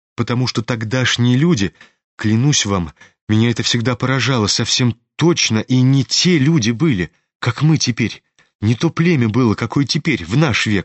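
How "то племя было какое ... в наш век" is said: ordinary delivery, nothing marked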